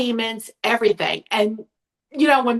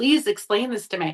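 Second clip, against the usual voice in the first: put-on sobbing, tearful voice. Retelling an upsetting phone call: imitating own sobbing plea. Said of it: "I was sobbing, like".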